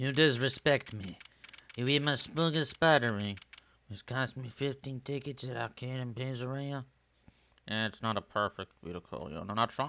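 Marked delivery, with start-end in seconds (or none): 0.0-6.8 put-on mob boss voice, slower. On a video call, doing a voice the listener should recognize: mob boss voice. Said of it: "he's doing a mob boss voice".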